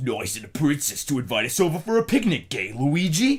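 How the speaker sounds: put-on gruff, growled Brooklyn accent. Describing how Mario talks to Luigi in a meme: gruff Mario voice. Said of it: "his voice is like a gruff Italian man".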